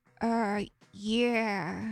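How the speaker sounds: pathetic put-on voice. Voicing Babs answering praise: pathetic Babs voice. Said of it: "because of how I deliver it".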